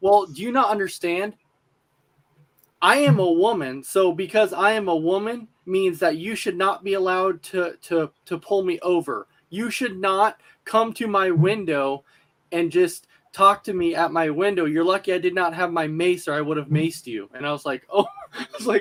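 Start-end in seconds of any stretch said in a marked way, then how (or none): none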